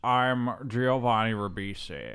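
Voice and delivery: put-on weird, upset-sounding film voice, accent sounding upset. Showing how the actor talks in the film: imitating Giovanni Ribisi's film voice. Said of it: "He's just talking like this".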